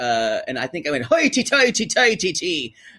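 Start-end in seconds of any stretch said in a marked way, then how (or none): 1.0-2.7 bad put-on Irish accent, very high, drawn out. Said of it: "we do have an Irish".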